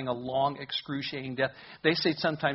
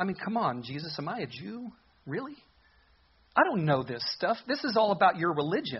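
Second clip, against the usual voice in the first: mock, faintly scornful, dismissive tone; 4 semitones higher than usual. Speaker acts out one man's reply to another, acting out a half-mocking reply. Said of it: "notice what Pilate said almost mockingly back".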